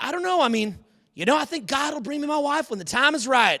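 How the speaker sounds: put-on Tennessee drawl. Quoting a man who hopes to find a wife, the speaker imitates his Texas-Tennessee accent. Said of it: "Talks like a classic, like Texas, Tennessee".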